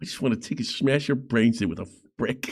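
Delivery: English movie villain voice. Speaker quotes a man they are discussing, in an english movie-villain voice. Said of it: "He sounded like an English bad guy in a movie".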